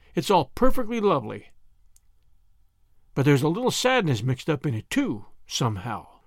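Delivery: plain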